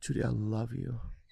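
deep, very hushed voice. After being told to say it deeper, repeating the line in a deeper voice.

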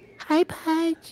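put-on baby talk pitched very high. Imitating how someone greets pudge on walking in: imitating baby talk. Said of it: "Hi like this baby talk".

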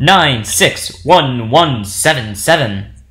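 very slow, deliberate put-on announcer voice. Reading out a room code to the other speaker: put-on announcer voice. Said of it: "you made it sound like you're an announcer".

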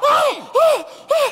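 high, piercing scream.

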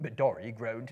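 ordinary talk

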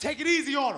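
high, loud yell. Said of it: "He yells out".

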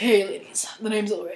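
deep, very hushed character voice, barely audible. Trying out voices for a list of characters; Solid Snake-style voice. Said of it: "maybe like a salad snake thing".

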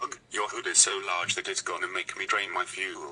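put-on British-accented voice. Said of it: "Why do you even have a British voice?".

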